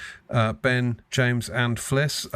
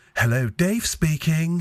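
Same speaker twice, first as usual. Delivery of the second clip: refined, posh put-on voice; 4 semitones higher than usual. Recalling a man who flipped voices answering the phone, imitating Dave's telephone voice. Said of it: "he had this telephone voice".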